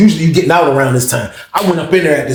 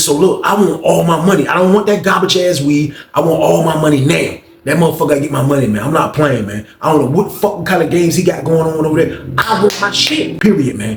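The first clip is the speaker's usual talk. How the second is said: ordinary delivery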